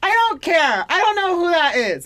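put-on high, loud childish kid voice. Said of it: "I was like".

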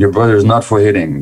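stern, firm, no-nonsense parent voice. Showing how to tell a child to stop hitting a brother: stern voice. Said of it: "you say in a stern voice".

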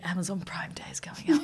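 mimicked whisper. Describing what a man whispered to a woman during a photo shoot, retelling a whisper. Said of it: "He's whispering".

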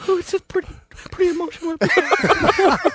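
mock very high-pitched, weepy, tearful, frightened mother voice. Retelling a phone call with his mother: imitating his frightened, tearful mother. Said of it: "All the time frightened or crying".

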